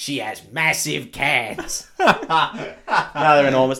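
very loud, swooping Brooklyn guy accent. Saying something crude, the speaker puts on a Brooklyn man accent. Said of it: "I'm going to say it like a Brooklyn man".

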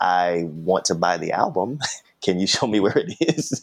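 acted smart-mouthed, snarky young kid voice. Retelling asking a store clerk for an album: imitating snarky twelve-year-old self. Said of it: "snarky twelve-year-old".

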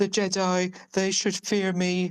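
a bit camp, slow, high, drawn out. Imitating how a character sounds in an audiobook: imitating a camp voice. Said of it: "It's not a bit camp voice as well".

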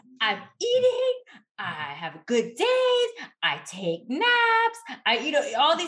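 acted frustration, rising voice. Speaker acts out what a woman told her, imitating a frustrated raised voice. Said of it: "That elevation of my voice".

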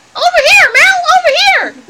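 very small, high-pitched voice. Telling a story, voicing a hidden speaker: little voice. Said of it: "he heard the voice again".

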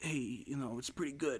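put-on Brooklyn accent. Speaker recapping a film scene does Steven Seagal's Italian Brooklyn accent. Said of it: "Steven Seagal's Italian Brooklyn accent".

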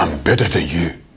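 mock, put-on Nigerian accent. Explaining what arrogant people are really saying, voicing them: Nigerian accent. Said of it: "That's my Nigerian accent".

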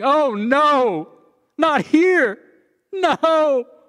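very high, very slow, drawn-out sobbing wail. Act out how he said people would react to waking up in hell, imitating sobbing. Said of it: "they will be sobbing".

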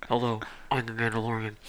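hushed, half-whispery voice, tone never changing. Talking about what they liked in a show, doing the Mandalorian's half-whispery voice. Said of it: "his whispery voice".

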